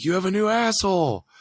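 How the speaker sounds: screaming while laughing. Retelling what a buddy yelled in a bathroom: imitating friend screaming and laughing. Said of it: "he was screaming, laughing".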